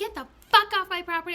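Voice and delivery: loud, high, furious raging scream. Retelling screaming at Michelle, caught on her ring camera, reenacting furious screaming. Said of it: "you can hear me screaming like".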